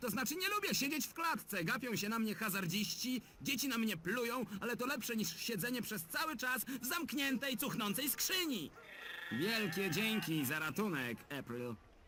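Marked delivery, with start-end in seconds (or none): 9.3-11.8 dry, heavily sarcastic delivery. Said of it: "To sarkazm".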